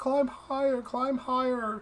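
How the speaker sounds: small, faint, far-off, very high voice. Telling a story, voicing the voice heard from above in a very small, faint voice. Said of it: "a very small, faint voice".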